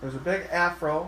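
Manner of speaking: ordinary delivery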